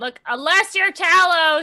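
loud, high yell with stretched words. Demonstrating the voice, Gwen yells over the tide. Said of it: "Gwen is gonna yell over the tide".

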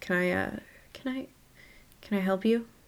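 wary, guarded voice. Narrator voicing a woman who eyes two visitors, cagey, frowning question. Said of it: "she looks a little cagey as she eyes the two of you, before frowning".

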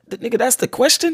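ordinary talk, nothing marked

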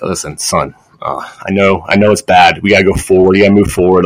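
earnest, serious, sincere fatherly tone, acted. Retelling a phone call from dad: imitating dad's serious, sincere tone. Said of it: "my dad calls me with the most serious, fucking sincere".

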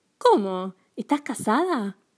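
caught-off-guard, surprised exclaiming. A girl reacts to her grandmother mentioning her husband, surprised exclamation. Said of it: "exclamó Sofía sorprendida".

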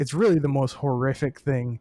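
normal talking voice

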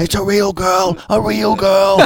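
acted screaming. Retelling a guy in a voice-chat game chasing a female character, retelling a scream. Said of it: "He was screaming like".

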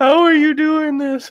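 mock sobbing, pitched very high. Retelling how a guy struggled with honey barbecue wings, imitating him crying. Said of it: "And he's just crying".

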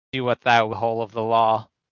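ordinary talk, nothing marked

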